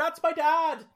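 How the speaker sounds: very high, shrill, very loud shout. Recalling a Vine of Griffin McElroy at WrestleMania: imitating Griffin McElroy shouting. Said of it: "where he's just shouting".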